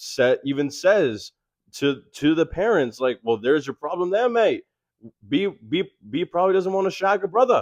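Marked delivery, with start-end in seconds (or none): 3.2-7.6 put-on pitched-up Australian accent. Quoting a bride's stepfather speaking to the parents, in an australian accent. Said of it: "Your Australian accent".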